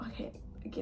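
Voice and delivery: very soft whisper.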